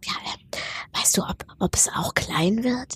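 slow, soft, drawn-out whisper. Speaker retells how people used to ask her something, imitating a whispered question. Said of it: "das wurde dann immer so im Flüsterton gefragt".

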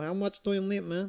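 put-on Mexican accent in English. Speaker imitates the sellers he bought grass from, put-on Mexican accent. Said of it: "They talk like this".

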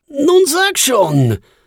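pleading, pitched very high. A narrator reads a man pressing his companion at a café table: begging. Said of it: "bettelte er".

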